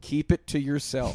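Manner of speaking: ordinary talk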